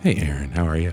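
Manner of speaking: radio announcer's on-air broadcaster voice. Co-host greeting aaron during the podcast intro, in a radio voice. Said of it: "That was a good radio voice".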